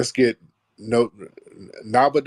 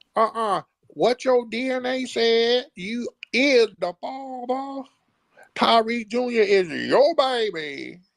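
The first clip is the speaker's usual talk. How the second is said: put-on very high, jeering talk-show guest voice, "baby" drawn out; 11 semitones higher than usual. Mocking a caller by imitating how they sounded: mocking a caller like a Maury guest. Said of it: "that's what you sounded like".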